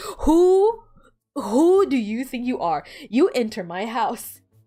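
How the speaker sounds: seething, fuming, furious angry outburst. Retelling fuming in a seat while playing: imitating own fuming past self. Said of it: "I was fuming in my seat".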